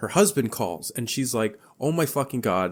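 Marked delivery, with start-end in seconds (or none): 1.8-2.7 put-on panicked outburst. Retelling a movie scene where the wife's husband calls: imitating someone panicking.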